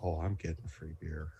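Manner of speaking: very hushed, low, under-the-breath mumble. A character walking away mutters to himself; mumbling under his breath. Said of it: "mumbles under his breath as he walks away".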